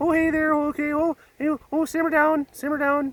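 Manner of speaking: very high, squeaky little stick-puppet voice. Speaker recalling a popsicle-stick puppet who introduced shows, popsicle stick puppet voice. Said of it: "And he talked like, I don't know, I can't do the voice".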